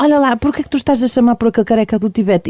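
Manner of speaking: ordinary talk, nothing marked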